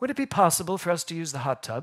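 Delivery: put-on small child's voice with Canadian English accent. Retelling what a young boy asked, in a little Canadian English accent. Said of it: "in that little Canadian English accent".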